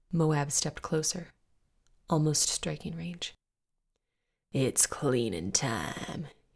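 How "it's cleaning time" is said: low, dropped growl. A man steps closer to a woman on the floor and speaks, growled. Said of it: "he growled".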